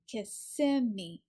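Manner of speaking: Kissimmee with weight on second syllable, sim. Explaining how the place name is pronounced: stress on sim in kissimmee. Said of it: "the stress is on the second syllable".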